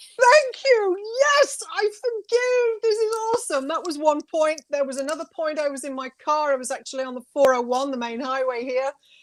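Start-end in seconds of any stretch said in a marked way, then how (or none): 0.2-3.7 very high, full-throated belting, acted out. Retelling arms raised on a cliff: retelling own belting out. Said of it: "You were just belting out?".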